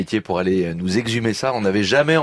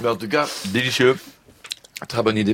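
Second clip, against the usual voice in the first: words chewed, spoken with a full mouth. Host tasting food in the studio, talking with mouth full. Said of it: "pardon, j'ai la bouche pleine".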